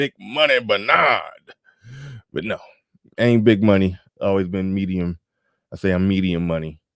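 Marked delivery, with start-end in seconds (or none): 0.0-1.5 acted elderly man voice. Saying a nickname the way Brother Xavier sounds: Brother Xavier old-man voice. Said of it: "that old man voice".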